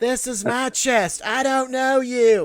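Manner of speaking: shrill, high, loud, forceful holler. Joining a story about yelling at people taking resources, mock yelling at people. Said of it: "I'm yelling at them, like".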